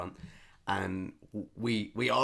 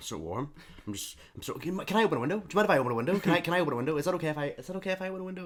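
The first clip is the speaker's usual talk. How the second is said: very high, stumbling, looping restarts, talking to herself; 9 semitones higher than usual. Retelling how a sweating woman, with nobody around her, asked to open a window: imitating a woman talking to herself. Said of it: "She's like".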